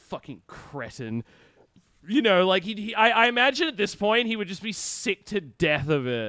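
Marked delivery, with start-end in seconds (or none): 0.1-1.2 mock mumbled muttering, lower and quieter. Imagining an actor's reply to a fan, imitating muttering under breath. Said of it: "under his breath".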